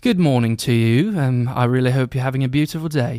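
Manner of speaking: put-on British accent. Showing an interviewer how to do a British accent for kids: British accent. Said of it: "Can you give us an example?".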